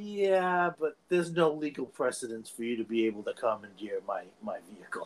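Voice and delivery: mock-deadpan delivery. Acting out a movie character's reply, imitating a deadpan delivery. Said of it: "he's so deadpan".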